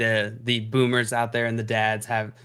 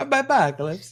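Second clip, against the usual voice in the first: put-on Italian chef accent, mock chef voice; 10 semitones higher, 4 dB louder than usual. Repeating the other speaker's farewell, say it in an Italian pizza chef accent. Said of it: "now it's getting more Italian pizza chef".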